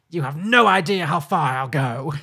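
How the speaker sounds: epic, booming, slow movie-trailer voice. Retelling a film scene where she threatens the gremlin: imitating a movie trailer line. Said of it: "she goes full, like, trailer line".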